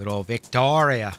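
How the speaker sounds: terrible put-on Australian accent. Chatting about Australia, slips into a terrible Aussie accent. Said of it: "It's my terrible Aussie accent".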